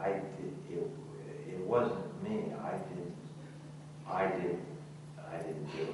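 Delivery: soft, halting, scared, timid mumble.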